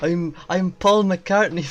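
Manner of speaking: loud, put-on Scottish accent. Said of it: "I don't know why I've gone Scottish now".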